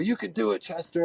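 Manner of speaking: put-on German accent, lifted. Recounting standing atop a tall ledge, the speaker quotes Marcel in his German accent. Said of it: "in his German accent".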